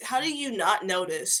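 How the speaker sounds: ordinary talk, nothing marked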